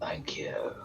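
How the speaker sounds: whispered, rasping, breathy ghost voice. Voicing a fading ghost thanking the heroes: raspy ghost voice. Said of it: "just in this raspy, this raspy voice".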